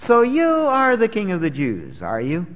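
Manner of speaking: lightly mocking, mildly amused, swooping pitch. Explaining the tone in verse 33, voicing it with mock mild amusement. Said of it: "a tone of mild amusement in his voice".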